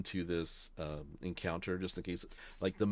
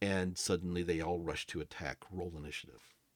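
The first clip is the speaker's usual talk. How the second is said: ordinary talk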